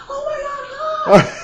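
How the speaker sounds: very loud, high, with the word "my" stretched out. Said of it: "he has the biggest personality. He's like".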